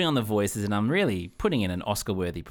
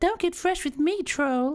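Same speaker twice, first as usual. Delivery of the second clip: very high, put-on damsel-in-distress voice. Voicing a troll trying to cross the bridge, damsel-in-distress voice. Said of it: "more of the damsel in distress".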